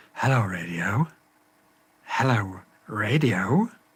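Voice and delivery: slow, sultry, seductive, sexed-up tone. Talking to a radio that won't respond to commands, in a sexed-up voice. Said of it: "Maybe I have to sex it up".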